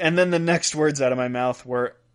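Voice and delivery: ordinary talk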